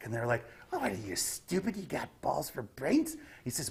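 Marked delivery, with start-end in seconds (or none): 0.7-3.2 high, swooping goblin voice with sharp growls and snarls. Voicing a goblin answering another goblin, in a snarling goblin voice. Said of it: "they will make little sharp growls and snarls".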